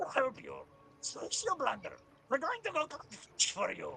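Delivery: put-on, high, swooping goblin character voice. Playing a goblin who insists he's an orc, speaking to another character: goblin character voice. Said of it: "better mic if you're gonna do that voice".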